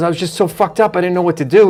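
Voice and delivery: ordinary talk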